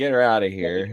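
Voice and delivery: ordinary talk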